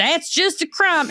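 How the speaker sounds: put-on hometown accent, pitched very high. Imitating how people from where the speaker is from sound: put-on local accent. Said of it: "I'm doing that voice because it's from where I'm from".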